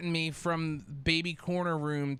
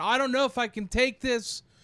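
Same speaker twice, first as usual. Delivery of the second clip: play-acted, high, half-yelled outburst, breaking down; 9 semitones higher, 3 dB louder than usual. Recounting nearly two more hours stuck in that room, quoting yourself then, retelling own yelling. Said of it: "I'm like kind of yelling".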